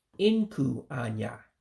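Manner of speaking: voice dropping down on inku. Teaching how to say the word for eyebrow: falling pitch on inku. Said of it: "my voice is going down when I say inku".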